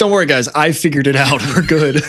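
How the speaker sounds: proud triumphant tone. Teasing another speaker by imitating him: imitating someone saying it proudly. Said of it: "you just proudly say".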